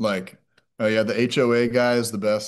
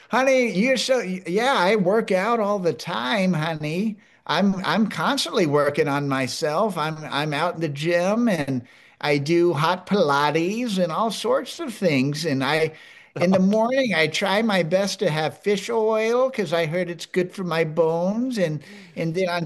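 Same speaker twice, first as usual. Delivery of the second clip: put-on old granny character voice, pitched higher; 7 semitones higher than usual. Showing off the put-on persona, the speaker talks as her: Vivian Rogers grandma voice. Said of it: "my grandma voice".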